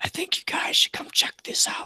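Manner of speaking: soft, barely voiced, quiet whisper. Game master voicing Billy coming back to the group, in Billy's whispery voice. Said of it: "talks in sort of whispery voice".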